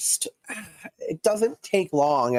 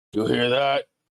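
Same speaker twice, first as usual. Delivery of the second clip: rumbled, grumbling giant's voice. Voicing a giant heard in the distant fog: low grumble. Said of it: "a low grumble go".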